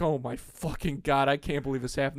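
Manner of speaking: put-on panic, freaking out. Retelling own reaction after hitting a car: imitating own panic. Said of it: "I'm freaking out".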